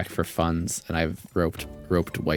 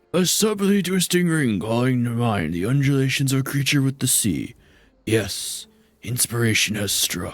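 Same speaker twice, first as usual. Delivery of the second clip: mock elderly man voice; 6 semitones higher than usual. Voice acting a quest character the other speaker calls an old man: old man voice as Godbert. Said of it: "He's like an old man".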